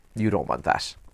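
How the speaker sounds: ordinary talk, nothing marked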